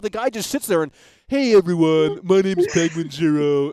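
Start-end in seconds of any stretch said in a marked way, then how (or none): 1.3-3.7 put-on dumb, stupid-sounding voice. Complaining about a YouTuber who makes the same video daily, mocking Penguinz0's stupid voice. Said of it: "that stupid voice".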